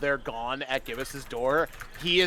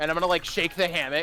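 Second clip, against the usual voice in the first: usual speaking voice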